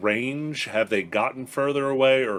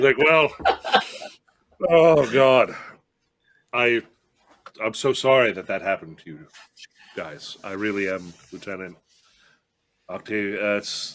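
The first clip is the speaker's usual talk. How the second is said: put-on tipsy, apologetic voice. Game master voicing a drinking party guy apologizing to Lieutenant Octavia, drunk apology. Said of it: "Like the one wineskin is empty. He's now just draining the next one. / Like the one wineskin is empty. He's now just draining the next one. / He's like, / He's now just draining the next one".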